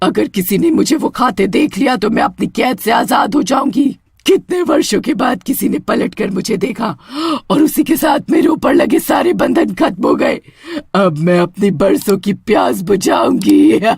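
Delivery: storybook witch character voice. The freed witch speaks after her bonds break, witch character voice. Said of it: "तीस साल पहले मुझे उस कुएं के पानी में कैद कर उस तांत्रिक को क्या लगा था कि तुमने हमेशा के लिए / तीस साल पहले मुझे उस कुएं के पानी में कैद कर उस तांत्रिक को क्या लगा था कि तुमने हमेशा के लिए मुझसे छुटक".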